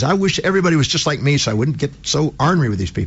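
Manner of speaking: plain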